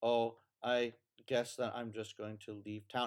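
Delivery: low, flat, deadpan, robot-like monotone drone. Describing a movie scene, speaker imitates a character, imitating robotic talking. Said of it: "she's talking like a robot, and she's talking like this".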